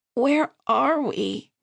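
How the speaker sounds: rough, hoarse, croaking voice. Narrating a story, the narrator asks where they are after fleeing: hoarse croak. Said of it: "My voice came out in a hoarse croak".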